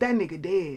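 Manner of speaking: put-on rural country accent. Retelling a strange night phone call: imitating caller's country accent. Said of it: "it was a country ass accent".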